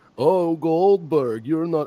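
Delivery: put-on slow, drawn-out, gloating Russian accent. Acting out a wrestler gloating on the microphone: imitating Gunther with a Russian accent. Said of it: "I don't know why he's Russian now".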